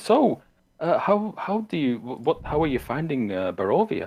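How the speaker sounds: high, swooping, stumbling delivery. Voicing a noblewoman asking guests about the land: Lady Wachter voice. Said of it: "And she says".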